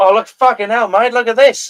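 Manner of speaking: put-on Australian accent. Acting out Australians finding a koala: Australian accent. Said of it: "That's a pretty fucking good Australian accent".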